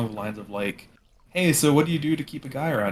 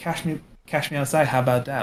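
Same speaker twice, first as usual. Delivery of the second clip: put-on thick Valley Girl accent; 3 semitones higher than usual. Retelling a girl who talked trash on a show: imitating thick Valley Girl accent. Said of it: "very thick Valley Girl accent".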